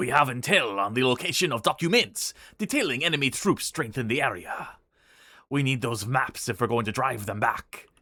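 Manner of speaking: put-on French accent. Voicing the British commander's mission lines in a game, French accent. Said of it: "That is me giving a French voice to the British commander".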